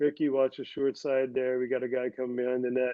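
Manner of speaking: flat, level, unexcited conversational monotone drone. Quoting how Brian talked during play, in Brian's flat monotone. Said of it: "He's not yelling, just this monotone".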